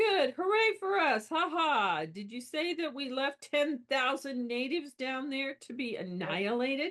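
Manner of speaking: hollow, dry, sarcastic cheer. Acting out a character's line from the book: acting out sarcasm. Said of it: "He's being sarcastic".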